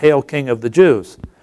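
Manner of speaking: ordinary delivery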